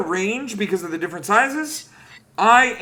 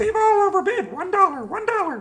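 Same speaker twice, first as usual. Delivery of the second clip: very high, squeaky, raised voice; 11 semitones higher than usual. Guessing another player's bid: impression of Canis. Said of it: "that's my impression of Canis".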